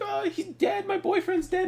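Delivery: whiny, loud wailing sob pitched very high. Mocking a game character who is crying: imitating someone crying. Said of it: "crying, and he's like".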